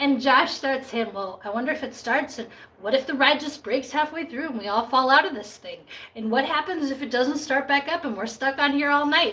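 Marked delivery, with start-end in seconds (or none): none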